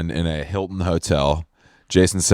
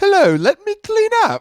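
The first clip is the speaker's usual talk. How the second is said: very high, bossy put-on British butler voice; 4 dB louder than usual. Riffing on a name with a co-host, playing a bossy British butler. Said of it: "like a bossy bottom but British".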